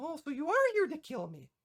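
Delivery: high, swooping small fairy dragon voice. Voicing a small fairy dragon who greets a player: small fairy dragon voice. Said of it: "this fairyish small looking dragon".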